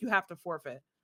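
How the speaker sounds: mock-angry, imitated angry delivery. Retelling what an angry Pokemon opponent told them, imitating an angry demand. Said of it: "he got so mad at me".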